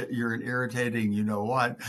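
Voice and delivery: ordinary talk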